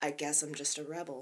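low, hushed, soft, sexy seductive voice. Recapping a scene where he answers her for coming to the hospital: Ronan's voice, put-on sexy. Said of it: "in the sexiest voice".

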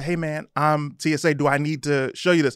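plain

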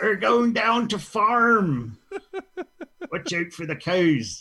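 bad put-on Cornish accent, very high, loud. As an outsider joking about Cornwall, put on a terrible Cornwall accent. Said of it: "doing a terrible accent like that".

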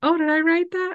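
very high, sweetly innocent little voice. Retelling a podcast interview, acting out a poet's answer to the host, mock-sweet reply. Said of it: "Mary Oliver really sweetly goes".

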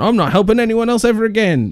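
mock very high, huffy, grumpy sulking voice. Imitating how he sounds in a bad mood: imitating someone in a bad mood. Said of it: "he'll be in a bad mood going".

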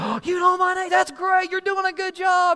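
acted-out thrilled and flattered voice, very high and loud. Quoting her reaction when you said her name out loud: imitating someone thrilled. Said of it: "she was just thrilled".

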